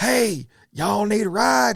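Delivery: hollering, high and drawn out. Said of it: "He hollers".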